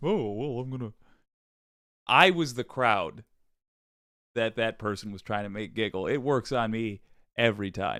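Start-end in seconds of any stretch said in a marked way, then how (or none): 0.0-0.9 stock put-on dumb jackass voice. Showing the voice just heard: generic jackass impression. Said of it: "the generic jackass impression".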